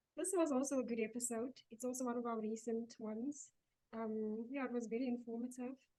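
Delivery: very soft, hushed voice. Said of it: "You sound very soft".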